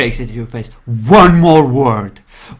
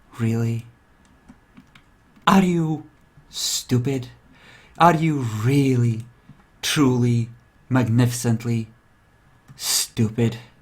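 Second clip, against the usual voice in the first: very soft, slow, hushed half-whisper; 9 dB quieter than usual. Voicing a character who leans forward to half-whisper to a player: half-whispering in character. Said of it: "he leans forward to whisper to you".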